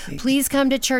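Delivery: put-on high-pitched begging, pleading tone. Recalling how she begged and pleaded with him, retelling her own pleading. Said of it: "I begged and pleaded for him".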